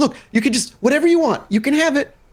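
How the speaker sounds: very high-pitched put-on elderly woman voice. Narrating a game scene, voicing the old woman as she speaks up, old woman voice. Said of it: "you hear the old woman kind of speaks up".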